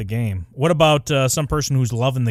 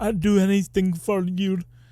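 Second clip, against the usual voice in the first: high-pitched, slow, spaced-out, drifting voice; 9 semitones higher than usual. Speaker describes how the character Masaria talks, Masaria impression. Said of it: "She sounds like a more Down syndrome version of Calypso".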